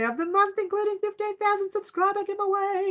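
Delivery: very high-pitched, lifted-up voice. Announcing the upcoming subscriber giveaway to viewers, in a high-pitched voice. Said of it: "I said that in a high-pitched voice".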